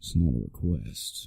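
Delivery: slow, low, bassy, breathy near-whisper. Suggesting how a line should be delivered, in a low bassy voice. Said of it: "if you lower the tone but just put more bass".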